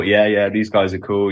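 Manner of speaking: usual speaking voice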